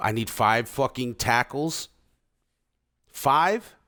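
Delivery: full hollering outburst, loud, high and drawn out. Player setting up his team schedule, looking at the team's needs, yelling. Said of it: "Sorry for yelling".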